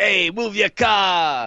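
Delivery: put-on old New Yorker voice. Showing a friend what the anger is like, in an old New Yorker guy voice. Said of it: "like old New Yorker guy go like".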